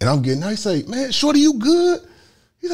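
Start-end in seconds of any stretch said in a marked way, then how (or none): 0.8-2.0 very high, loud, concerned calling out.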